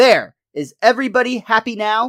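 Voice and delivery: high, loud, fed-up exasperated yell. Acting out Lisa's line after biting the hot dog: imitating Lisa yelling. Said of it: "takes a bite of the hot dog and yells out".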